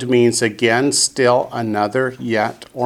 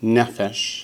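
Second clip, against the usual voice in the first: nefesh with weight on first syllable ne-; 4 dB quieter than usual. Hebrew vocabulary lesson, stress on first syllable of nefesh. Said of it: "Notice the accents on the first syllable".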